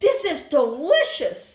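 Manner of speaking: put-on loud, high-pitched calling out. Retelling calling to him across a dark yard at night, retelling a loud call. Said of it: "I said loudly across the dark abyss".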